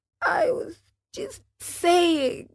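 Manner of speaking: whining whisper. Reading a story aloud, voicing the marionette's reply: whining whisper. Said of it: "whined the marionette in a whisper".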